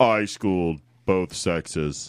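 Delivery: voice dropped very low. Repeating the athlete's boast a second time: deeper voice. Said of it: "His voice got deeper".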